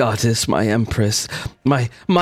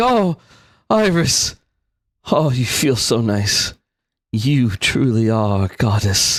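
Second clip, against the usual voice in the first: put-on drunken, lustful voice. As a player's character helps him to the tent, he speaks drunk and lustful. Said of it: "he sounds drunk, but also kind of like lustful".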